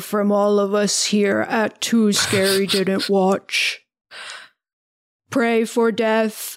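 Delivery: slow, warbly robotic voice. Closing out a podcast episode in a character voice: warbly Frank Bugman voice. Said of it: "I will close this out with the warbly Frank Bugman voice. ... It's like a robotic voice, but I'm going to do my version of it".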